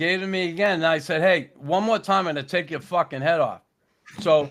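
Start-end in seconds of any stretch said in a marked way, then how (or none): none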